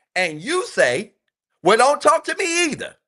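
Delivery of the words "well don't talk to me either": put-on spicy, sassy tone, very high and raised. Advising men on arguments, acting out the man's reply to her: mock-sassy retort. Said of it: "All sassy and spicy like".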